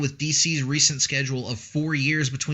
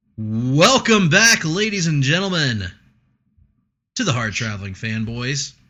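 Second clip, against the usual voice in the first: loud on-air presenter delivery; 5 dB louder than usual. Host welcoming listeners back to the show, in a radio announcer voice. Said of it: "a little bit of ra- radio voice".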